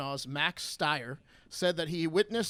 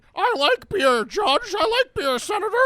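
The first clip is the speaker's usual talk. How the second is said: put-on puppet-like voice, higher and louder; 14 semitones higher, 9 dB louder than usual. Imitating a judge who sounds like a Muppet: Brett Kavanaugh impression, Muppet-like voice. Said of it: "Kavanaugh also sounds like a Muppet".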